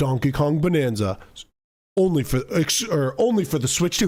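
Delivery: deep commercial-announcer voice. Imagining a game commercial, the speaker mimics its announcer; deep announcer voice. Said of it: "the deep voice guy goes".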